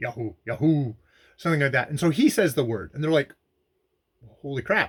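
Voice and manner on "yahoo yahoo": rasping, roughened, hoarse voice. Retelling a story where puzzled people keep saying a word, hoarse 'Yahoo'. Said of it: "kind of hoarsely".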